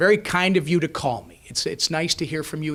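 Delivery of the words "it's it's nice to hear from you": ordinary talk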